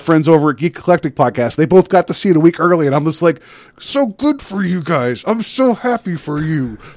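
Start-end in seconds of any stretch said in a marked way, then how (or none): 3.8-6.8 slow, pitched-up, forced speech through clenched teeth. Retelling reaction to friends seeing Deadpool a week early; mock through clenched teeth. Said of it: "Through clenched teeth".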